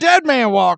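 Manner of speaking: put-on shouting prison guard. Retelling a movie scene where Percy shouts: imitating Percy shouting. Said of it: "Percy is just shouting".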